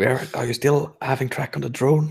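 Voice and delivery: whispered voice. Retelling someone else's question during a game, whispering. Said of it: "Samara's like whispering".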